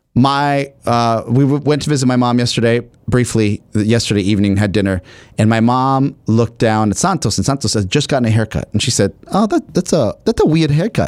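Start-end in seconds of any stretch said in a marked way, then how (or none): 9.3-11.0 put-on slight Spanish accent, much higher, slower. Speaker quoting their mom at dinner: slight Spanish accent. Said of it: "she says it in a little Spanish accent".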